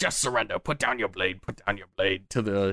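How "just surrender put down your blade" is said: small goblin creature voice. Game narrator speaking as the little goblin to the human, in a little goblin voice. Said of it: "You hear the little goblin, he says".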